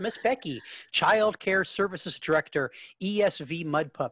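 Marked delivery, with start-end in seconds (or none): none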